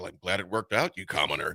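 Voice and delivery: low, smug, condescending, superior tone. Correct the other person by acting out how they really said it, mock-smug, imitating them. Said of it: "the way you said it was pretty smug".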